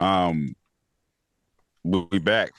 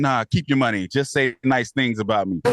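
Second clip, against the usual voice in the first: ordinary talk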